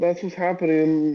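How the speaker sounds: plain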